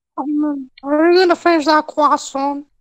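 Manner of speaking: put-on cartoon kid voice. Showing off for someone who wants to hear it, in a Carl Wheezer impression. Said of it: "I can also do a Carl Weezer if you want".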